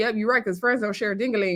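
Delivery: ordinary delivery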